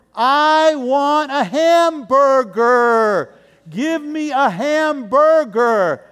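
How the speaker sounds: loud, slow, deliberate. Imitating travelers speaking english to locals abroad, talking louder. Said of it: "they think by talking louder".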